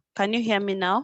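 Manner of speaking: usual speaking voice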